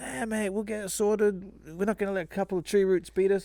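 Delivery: put-on English accent. Retelling what the second plumber said when he came out: put-on English accent. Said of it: "doing an English accent?".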